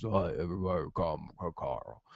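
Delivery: odd, weird deep voice, low and soft. Recapping a TV episode, the speaker imitates Rick's weird deep voice. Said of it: "Real deep voice".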